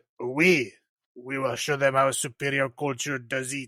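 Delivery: very bad, terrible put-on French accent. Opening a horror podcast episode, voicing what one country said, in a very bad french accent. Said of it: "very, very bad French accent".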